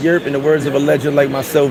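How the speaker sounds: ordinary talk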